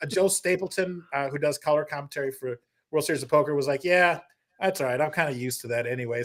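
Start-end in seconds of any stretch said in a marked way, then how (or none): 3.8-6.2 put-on resigned, sad tone. Retelling a guest's reply to being cut off: imitating a resigned, sad reply. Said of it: "sad almost, like he was just resigned".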